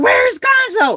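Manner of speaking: shrill, very high, loud screaming shout. Retelling driving down the highway and screaming at Winston, retelling a scream. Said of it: "I'm like screaming at Winston".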